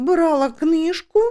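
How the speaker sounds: high, scared, timid, frightened voice. A narrator reads a shy spinster answering a shouting detective, frightened. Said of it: "злякано сказала вона".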